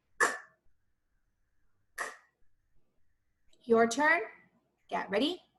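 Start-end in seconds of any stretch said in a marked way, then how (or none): 0.2-2.0 short, quick, breathy "k", whispered. Showing learners how to say a quick sound: said fast. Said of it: "we have to say it fast".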